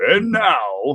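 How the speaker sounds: fake, forced monster-truck rally announcer voice, pushed hard. Imitating trainees who dig deep for an announcer voice: forced deep announcer voice. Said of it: "they always try to dig deep for their".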